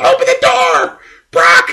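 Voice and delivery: very high, shrill, very loud screaming. Retelling a wrestling match, imitating Paul Heyman screaming at the refs. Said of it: "screaming at them".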